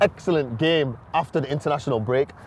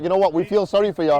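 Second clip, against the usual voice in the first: plain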